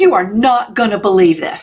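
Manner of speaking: put-on dramatic voice. Retelling what was said to a husband who ran in: imitating own dramatic voice. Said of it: "I used my most dramatic voice".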